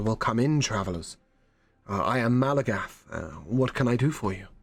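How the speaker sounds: mild, soft-spoken elf voice. Voicing an elf shopkeeper greeting travelers: speaking very softly. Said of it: "he speaks very softly".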